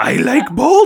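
creepy clown voice. Describing how his voice sometimes sounded, quoting him in a Pennywise voice. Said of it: "every once in a while he'd be like".

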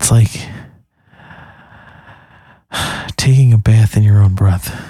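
breathy radio-announcer voice. Talking with Mike about doing NPR voice again; breathy NPR voice. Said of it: "It's nice to be breathy".

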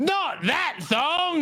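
best-effort put-on Australian accent, high pitch. Retelling what someone said, in your best australian accent. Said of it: "in the best Australian accent I could do".

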